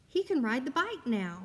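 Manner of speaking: reading aloud with eager excitement. Reading a sentence ending in an exclamation mark, with excited reading. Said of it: "I would read it with some excitement".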